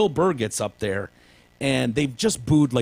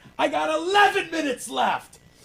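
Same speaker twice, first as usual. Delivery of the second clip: put-on angry comedian rant, higher. Retelling a comic answering a booing crowd: imitating Bill Burr going off. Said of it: "he's like".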